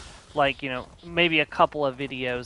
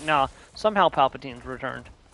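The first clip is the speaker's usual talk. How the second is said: mock matter-of-fact, offhand, no feeling at all. Mocking how the line was actually delivered: imitating a flat delivery. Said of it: "no emotion".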